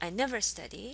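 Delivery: plain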